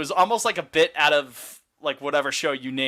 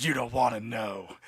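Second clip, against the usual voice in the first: fake tough guy voice, low and soft; 4 semitones lower, 8 dB quieter than usual. Leaning over to someone as a joke, doing a fake tough guy voice. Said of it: "just doing like a fake tough guy voice".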